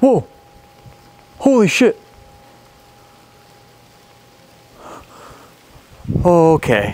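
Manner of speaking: very slow, spooked, startled, drawn-out and swooping. Exploring a dark location after seeing something move: freaked out. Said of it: "I'm getting a little freaked out".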